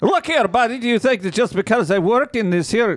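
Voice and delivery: put-on Russian accent. Playing a gas station worker scolding a customer: put-on russian accent. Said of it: "I'm getting very Russian".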